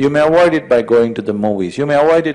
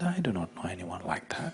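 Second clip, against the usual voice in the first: soft, gentle voice, very hushed and quiet; 5 semitones lower, 19 dB quieter than usual. Telling a joke, answering from inside: gentle voice. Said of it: "A gentle voice from inside said".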